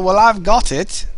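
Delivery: loud, awful put-on English accent. Talking to an audience while gaming, speaker puts on the worst english accent ever. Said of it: "You want the worst English accent ever?".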